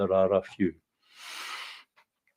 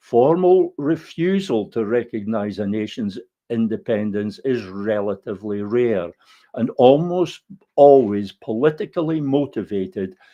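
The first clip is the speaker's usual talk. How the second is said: plain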